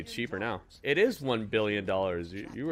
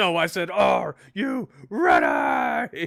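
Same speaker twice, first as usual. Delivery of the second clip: put-on screaming voice, much higher, louder; 8 semitones higher, 7 dB louder than usual. Acting out Triple H popping up after someone clicks yes on Netflix, imitating Triple H screaming. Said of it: "Why is he screaming at me?".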